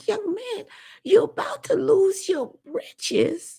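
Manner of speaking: put-on slow, very high elderly Jamaican woman's voice. Retelling what an old Jamaican lady said to a young man: imitating an old Jamaican lady. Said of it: "She's like".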